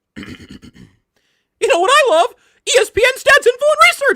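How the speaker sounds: loud, shrill, high cartoon mouse squeak. Asked to do the mouse voice again for an endorsement, in a mouse voice. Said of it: "you want to give me the mouse voice again".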